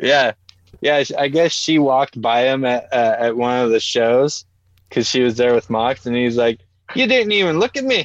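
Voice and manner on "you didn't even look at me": put-on pitched way up with an odd Irish-sounding accent. Retelling what the champion said when she walked by: imitation that sounds Irish. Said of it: "That actually sounded Irish".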